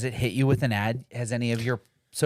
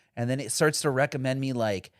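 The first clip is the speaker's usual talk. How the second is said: ordinary delivery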